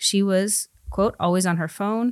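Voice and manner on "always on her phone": usual speaking voice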